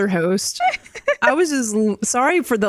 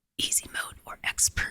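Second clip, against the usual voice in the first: quiet, put-on creepy, scary whisper. Redoing a podcast intro line to sound scary: mock scary whisper. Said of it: "'cause this is really whispering".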